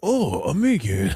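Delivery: put-on Chinese accent. Retelling a joke from playing on stream, mimicking a chinese accent. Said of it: "trying to mimic the Chinese accent".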